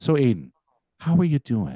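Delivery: gentle, swooping, drawn-out delivery. Showing how people ask after someone with a softened tone, drawn-out question. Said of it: "they kind of soften the tone, they drag the how you're doing out a little bit".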